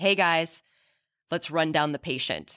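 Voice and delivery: ordinary talk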